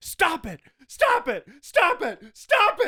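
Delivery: very high, very loud, desperate screaming. Retelling a movie ending where a character pleads with a tv station: imitating a screaming plea. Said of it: "him pleading with the T V station".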